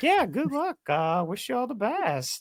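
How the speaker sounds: condescending, patronizing, very high and slow. Mimicking the other speaker's farewell: imitating a condescending tone. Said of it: "condescending tone, like, in your voice right now".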